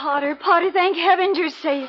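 crying through the words. Acting a scene, greeting potter: crying while speaking. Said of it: "You're crying".

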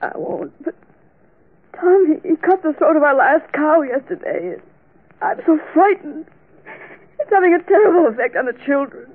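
sobbing through every word, high, loud, tearful. Asking for help while being comforted, crying. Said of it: "Please stop crying".

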